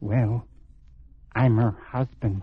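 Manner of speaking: low, hushed, secretive half-whisper. Answering a stranger's question about Helen Estabrook, half-whispering. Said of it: "Why are you whispering?".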